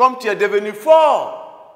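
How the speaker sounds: full exclamatory reading, very high and loud. Reading a french sentence aloud with its exclamation mark, exclamatory reading. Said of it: "là, j'ai respecté l'exclamation".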